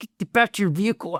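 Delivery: mock angry voice. Retelling repeating an order to a careless interpreter: imitating getting mad. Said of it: "I'm getting mad at him at this point".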